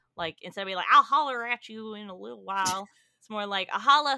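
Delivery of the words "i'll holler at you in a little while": put-on old man voice with a southern accent. Demonstrating saying holler versus holla, in a southern old man voice. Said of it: "you went southern old man".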